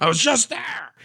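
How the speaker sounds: very high, fed-up, angry outburst. Explaining an in-game laundromat reference, angry. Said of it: "you sound angry about it".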